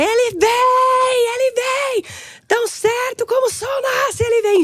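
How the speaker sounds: shrill, very high, slow crying shout, vem stretched long. Retelling a vision of the sun rising: retelling own shouting. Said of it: "e eu gritava".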